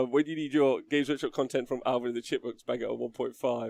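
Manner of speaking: plain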